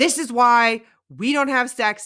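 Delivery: furious, heated, loud, really angry voice. Retelling a man in a scene she rewatched talking to a woman: imitating a really angry voice. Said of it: "really angry voice".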